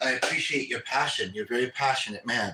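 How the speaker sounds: ordinary delivery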